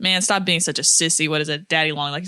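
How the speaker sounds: usual speaking voice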